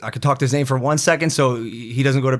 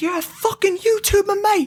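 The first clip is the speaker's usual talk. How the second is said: put-on very high, raging scream. Recounting knocking on a man's door while he threw insults, imitating someone screaming. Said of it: "he's screaming".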